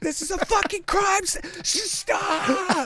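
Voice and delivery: mock, very high, stretched-out, drawn-out yelling. Retelling how the first guy at a murder scene stops people trampling footprints: imitating someone yelling.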